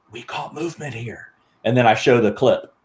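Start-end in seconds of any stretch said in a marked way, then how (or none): 0.1-1.2 very soft, barely audible, hushed stage half-whisper. Retelling walking up to a spot in his film, half-whispering. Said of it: "I'm whispering".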